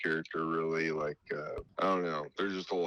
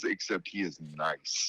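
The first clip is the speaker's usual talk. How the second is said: normal talking voice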